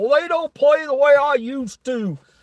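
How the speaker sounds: put-on complaining old man voice, pitched high. Mocking how an old man complains about kids: imitating an old man. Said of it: "old fart talking about".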